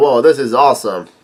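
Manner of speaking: normal talking voice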